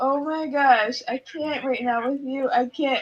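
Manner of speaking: drawn-out speech, laughing helplessly between words. Reacting to what another speaker just said: laughing while talking. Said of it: "I'm laughing".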